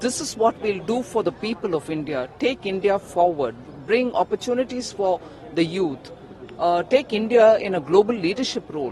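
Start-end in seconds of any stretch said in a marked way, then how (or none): none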